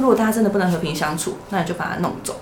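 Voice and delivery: ordinary talk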